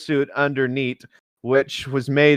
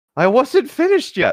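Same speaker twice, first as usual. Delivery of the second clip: whiny, very high-pitched whining voice; 10 semitones higher than usual. Narrating a story, giving a character's complaint, whiny. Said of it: "whined Light".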